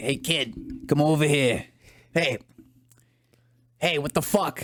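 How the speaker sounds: put-on Boston accent. Imitating older Boston locals calling a kid over: put-on Boston accent. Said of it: "walk around and be like".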